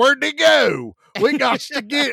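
put-on country hillbilly accent, pitched high. Retelling a film scene, quoting the group in the mud: put-on rural accent. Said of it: "I'm allowed to make this type of voice".

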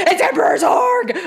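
put-on scream, pitched very high. Recounting a reaction while watching a film: retelling own scream. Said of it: "I started screaming".

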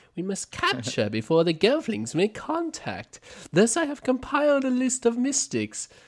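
very high voice with swinging pitch. Talking about capturing the Mystics, the speaker switches into the Chamberlain voice. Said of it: "I should probably do this in the Chamberlain's voice".

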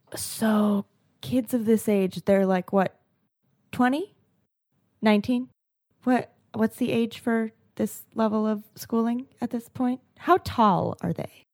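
soft, hushed half-whisper without voice. A character leans over in a booth to a reporter, half-whispering. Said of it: "Claire leans over and whispers to Duncan".

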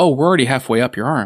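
ordinary delivery

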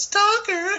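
high-pitched yell. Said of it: "Monique Gabrielle yells out".

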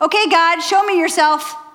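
all-out, high, full-lunged shout, as loud as possible. Retelling how someone lying on the grass called out to God: imitating someone shouting. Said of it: "at the top of his lungs says".

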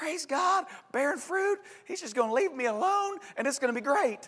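tiny, squeaky cartoon mouse voice. Preacher in a sermon voicing what a believer might think, in a Mickey Mouse voice. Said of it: "I use a Mickey Mouse voice sometimes".

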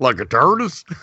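put-on American Southern accent. Repeating another speaker's words back: imitating a Southern accent. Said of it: "Like the way you said that, it was all Southern".

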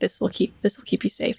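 low, quiet muttered words under breath. Role-player's character brushing another character's hair: muttering under breath. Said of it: "I'm just kind of muttering under my breath like".

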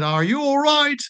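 very high, stretched-out American drawl. Retelling what an elderly american triathlete asked: imitating an american drawl. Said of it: "in her American drawl".

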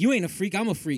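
ordinary talk

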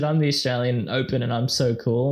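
faked little kid voice. Recounting a cringey video message, the speaker mimics its man's put-on kid's voice. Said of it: "He put on a kid's voice".

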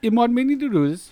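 imitated Jamaican accent. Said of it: "ones that did Jamaican accents".

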